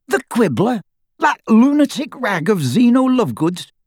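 very high, spluttering outburst. After choking on a fishbone, Dirk answers the suggestion to try the Quibbler, spluttering. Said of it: "he spluttered".

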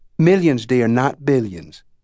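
ordinary delivery

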